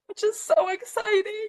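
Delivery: high-pitched, tearful crying mixed with laughter.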